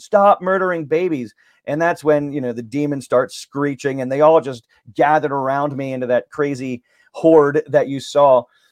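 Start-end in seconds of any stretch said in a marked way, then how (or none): 0.0-1.3 high, booming, ringing shout, acted out. Recounting a moment in the Capitol rotunda, the speaker retells shouting it again. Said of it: "I shouted it again".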